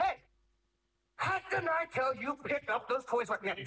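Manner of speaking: high, sharp, yelling parent voice.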